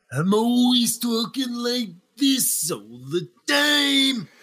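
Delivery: raspy, very slow drawl dragging every word. Showing how raspy people talk all the time: Randy Savage raspy voice. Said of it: "Randy Savage or Raspy people talk like that".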